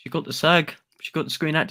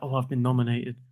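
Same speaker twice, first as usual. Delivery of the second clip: normal talking voice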